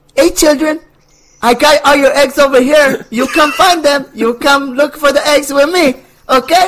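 thick Cuban accent, very high, loud. Asked by the others for an example, the speaker does Scorbunny with thick Cuban accent. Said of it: "thick Cuban accent".

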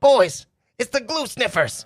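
shrill, very high goblin yell, called down. Voicing a goblin who notices the players and calls to the others: goblin yelling down. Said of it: "yells down to the other two".

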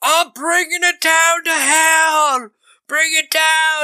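very high, wild, drawn-out yell. Recapping a film scene where he runs in with a chainsaw: imitating Dennis Hopper shouting. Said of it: "he's just shouting".

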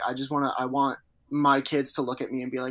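ordinary delivery

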